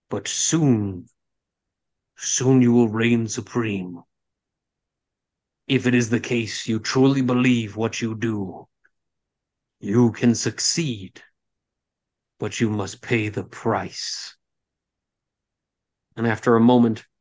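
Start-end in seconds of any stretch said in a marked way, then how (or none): 0.1-14.3 eerie, otherworldly haunting voice. A narrator voices an apparition answering Stormblood, in a haunting voice. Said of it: "a haunting voice kind of careens through".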